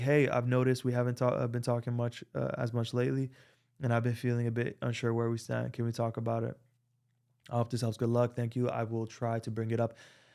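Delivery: normal talking voice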